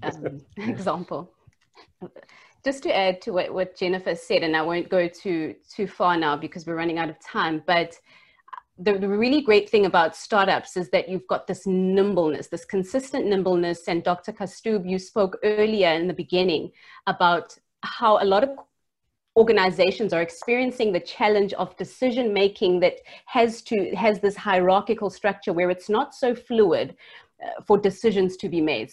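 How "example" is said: soft, slowed speech while laughing. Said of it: "I'm laughing at the new cow".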